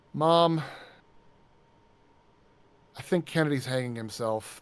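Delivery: offhand, passive, mildly irritated tone. Retelling what a sibling called out to mom: imitating a casually annoyed sibling. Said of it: "passive, casually annoyed sibling voice".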